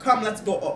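put-on little Jamaican twang. Teaching a Jamaican Patois phrase, saying it with a little Jamaican twang. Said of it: "I thought I had to add a little twang to it".

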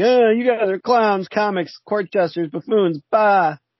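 high, slow crybaby whine. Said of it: "storms off like a crybaby".

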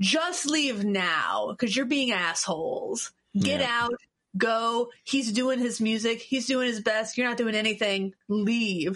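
put-on, mock-firm stern tone. Retelling ordering people to leave someone doing his music, in a put-on firm mom voice. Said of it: "very firm kind of mom voice".

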